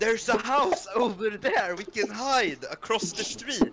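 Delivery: very loud shouting. Calling out to the rest of the party in character: shouting very loudly. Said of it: "I say very loudly to the rest of the party".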